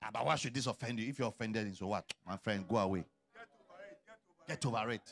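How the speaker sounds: low, dismissive brush-off, like it's nothing. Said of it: "You don't talk like that".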